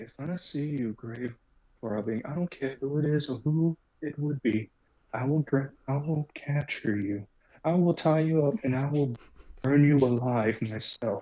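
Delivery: threatening, menacing, hushed half-whisper. Playing a character who gets right up to another's ear; half-whispering in his ear. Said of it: "He gets right up to his ear and whispers".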